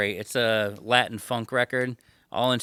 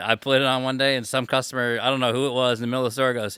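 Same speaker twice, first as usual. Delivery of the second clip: plain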